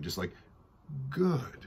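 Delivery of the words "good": slithery, snake-like, sly seductive voice, higher. Performing a line with a little snake seduction. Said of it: "I think I'm going to be like sort of a little snake seduction on that line".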